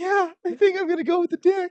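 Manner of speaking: put-on very high old-lady voice. Acting out a bar pickup scene as the old lady: playing an old lady at a bar. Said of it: "I'll be the old lady sitting at the bar".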